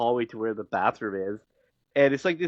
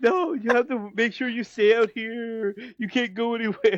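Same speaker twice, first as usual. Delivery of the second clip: put-on frantic panic, very high-pitched; 11 semitones higher than usual. Retelling a scene where she begs him to stay outside: imitating a panicked character. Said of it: "she's still, like, panicking".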